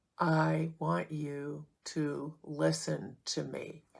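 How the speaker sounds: very slow, drawn-out, deliberate, intense delivery. Explaining ways of talking that feel like yelling, talking really slow. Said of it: "So talking really slow".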